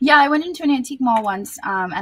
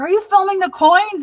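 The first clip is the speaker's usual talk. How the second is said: very high, shrill, loud, abrasive screaming; 11 semitones higher, 6 dB louder than usual. Retelling how an abrasive man screamed at the speaker while filming, imitating someone screaming. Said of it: "he was just like screaming at me".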